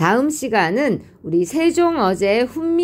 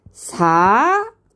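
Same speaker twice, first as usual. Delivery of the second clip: 사 said with pitch starting low and rising. Slowly reading a text following its tone marks: rising tone on 사. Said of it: "여기서 사 하고 올라가야 되겠죠".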